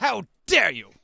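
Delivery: very loud, shrill, affronted, indignant huff. Voicing a bar patron upset that the beer ran out: indignant, in a huff. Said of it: "the bar patron in a huff says".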